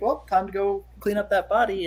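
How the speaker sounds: plain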